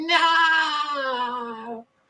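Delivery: high, screamy, overdramatic delivery.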